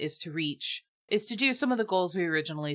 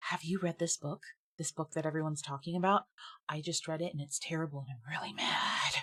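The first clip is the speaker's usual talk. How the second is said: put-on angry hiss, quieter; 7 dB quieter than usual. Retelling what another parent hissed at their kids' party, imitating an angry hiss. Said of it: "she leans over to me and she hisses".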